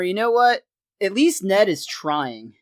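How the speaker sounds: ordinary delivery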